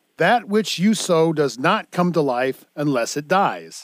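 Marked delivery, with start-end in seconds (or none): none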